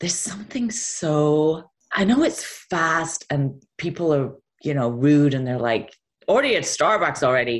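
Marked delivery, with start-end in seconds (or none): 6.3-7.6 fast, deliberately bad Nebraska accent. Describing New Yorkers and quoting them: bad Nebraska accent. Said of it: "that was a bad Nebraska accent".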